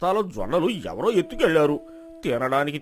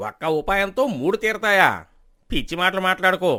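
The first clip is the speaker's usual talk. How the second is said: ordinary delivery, nothing marked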